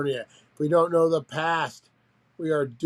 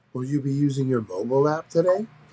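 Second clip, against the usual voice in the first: polished, sophisticated, refined computer-assistant voice. Acting out a voice taking an order, in a sophisticated ai voice. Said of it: "a sophisticated A I voice".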